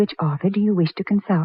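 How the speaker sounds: plain reading voice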